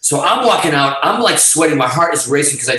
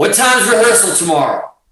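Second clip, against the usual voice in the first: casual, pitched-up calling out, projected over distance; 6 semitones higher than usual. Retelling calling up a long stairwell to someone at the top: retelling a shout across a distance. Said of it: "the stairwell's far".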